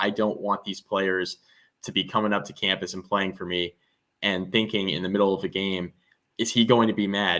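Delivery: plain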